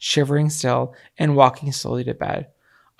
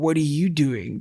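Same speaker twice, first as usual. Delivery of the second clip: mock drunk slurred speech. Retelling a drunk partner stumbling toward the car: imitating drunk slurring.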